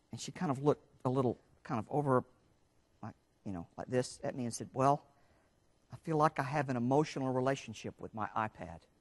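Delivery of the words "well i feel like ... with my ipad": voice dropped low, hushed, under the breath. Quoting what one of the women said to the speaker, in a lowered voice. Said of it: "she lowered her voice".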